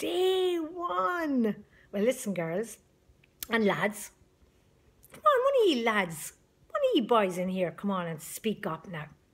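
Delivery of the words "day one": put-on very high, drawn-out children's shout. Speaker describing how the two at home shout back when they get cross: imitating them shouting. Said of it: "the both of them start shouting".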